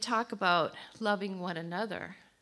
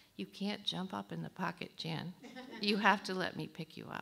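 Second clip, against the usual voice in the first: hushed, barely-there voice, really quiet and soft; 6 dB quieter than usual. Retelling a voice once heard speaking: imitating a really quiet voice. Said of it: "I just heard this really quiet voice".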